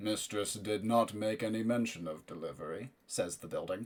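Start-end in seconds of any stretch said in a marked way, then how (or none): 0.0-2.9 deep rumbling voice, quieter. Voicing the building as it questions a character about a delivery, deep rumbling voice. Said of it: "the deep rumbling voice that seems to emanate from the walls".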